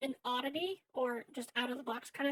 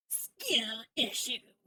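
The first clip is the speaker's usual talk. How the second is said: gargly gurgling throat voice, much louder; 5 dB louder than usual. Trying to imitate a sound made with the uvula, in a gargly put-on voice. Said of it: "Gargly kind of voice when he says those lines".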